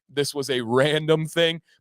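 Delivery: ordinary talk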